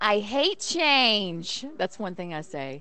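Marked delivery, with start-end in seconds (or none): 0.0-1.6 put-on loud, high-pitched New York stage accent. Giving a taste of her lines from a 9-to-5 production, new york accent. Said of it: "I get to talk with the New York accent".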